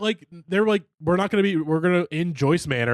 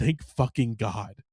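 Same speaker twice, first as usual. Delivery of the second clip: hushed, relieved mutter under the breath; 6 semitones lower, 5 dB quieter than usual. Acting out someone's reply about changing the album cover: imitating muttering under his breath. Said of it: "under his breath being like".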